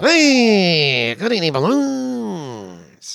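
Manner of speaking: put-on voice like an old car horn. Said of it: "I don't think he talks like that".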